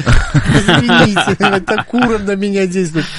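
high, giggling, laughing voice.

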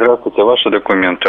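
plain

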